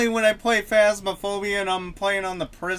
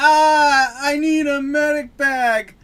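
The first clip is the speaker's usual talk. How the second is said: put-on screaming, higher and louder; 6 semitones higher, 7 dB louder than usual. Imitating a game character who always screams for a medic bag: imitating Dallas screaming. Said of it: "He always screams".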